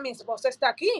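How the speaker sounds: ordinary talk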